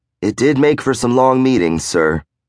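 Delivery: ordinary delivery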